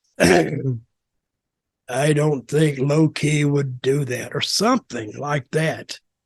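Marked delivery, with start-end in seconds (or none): 0.2-4.4 very deep voice, very slow delivery. Retelling what a wrestler said when asked to do something: imitating a real deep voice. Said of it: "in that real deep voice".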